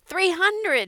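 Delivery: shrill, very high, loud yell. Narrator voicing Frank calling out a number, yelling. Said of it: "Frank yelled".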